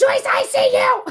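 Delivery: acted yelling. Retelling what they yelled at Joyce: imitating own yell. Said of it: "because I yelled".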